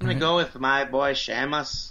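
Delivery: bad put-on Irish accent drifting into Arabian-sounding accent. Taking turns at accents, the speaker picks his: bad Sheamus impression. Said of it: "That sound like an Arabian guy".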